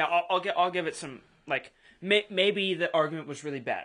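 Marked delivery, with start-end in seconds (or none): none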